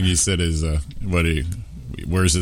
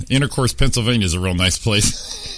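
normal talking voice

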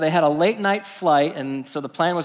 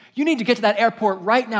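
firmer, more insistent urging tone. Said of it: "be a little more firm with him".

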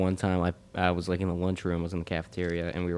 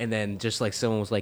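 normal talking voice

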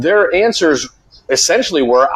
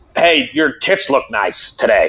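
sleazy, creepy creeper voice; 3 semitones lower than usual. Describing a manager catcalling a woman, the speaker acts out his words in a put-on creeper voice. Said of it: "that was an amazing creeper voice you had".

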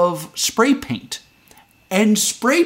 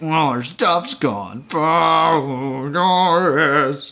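mock gritted-teeth delivery, through clenched teeth, lower; 4 semitones lower than usual. Acting out the Whos still angry about their missing stuff: mock gritted-teeth delivery. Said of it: "they all did it through gritted teeth".

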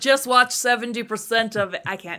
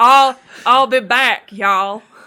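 put-on Southern robot voice, louder; 5 dB louder than usual. Comedy riff imagining the Terminator as Southern, doing a Southern Terminator voice. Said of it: "what if Terminator was like Southern and racist?".

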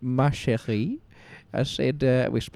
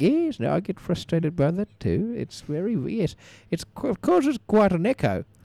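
imitated woman's voice, pitched higher; 6 semitones higher than usual. Retelling how she answered you, putting on her voice. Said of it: "It's me just putting on her voice".

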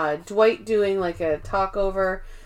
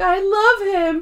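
play-acted very high, loud sobbing wail; 12 semitones higher, 6 dB louder than usual. Retelling a scene where Angela starts crying: imitating Angela crying. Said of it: "And then she just starts crying".

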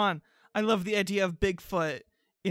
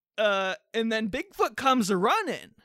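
ordinary talk, nothing marked

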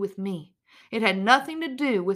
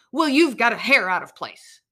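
loud, mock nasty, mean snap; 7 dB louder than usual. Retelling how he snapped back at her: imitating a mean, offensive snap. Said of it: "With the meanest and most offensive tone, he snapped at me".

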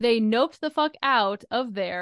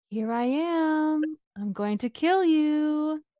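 eerie, creepy high voice, "am" drawn out; 6 semitones higher than usual. Telling a story, voicing what she suddenly hears, in the creepiest voice imaginable. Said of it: "the creepiest voice you could probably ever imagine say".

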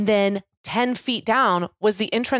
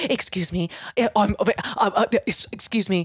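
put-on flustered, embarrassed stammering. Retelling a dad leaving the wrong restroom: imitating a flustered stammer. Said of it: "he just melts".

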